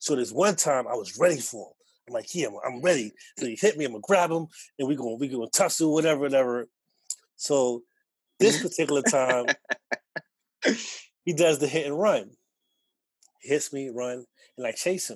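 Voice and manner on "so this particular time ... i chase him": giggly speech broken up by laughter. Telling a story about chasing someone who hit and ran, laughing while talking. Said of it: "I'm laughing because I didn't think this through".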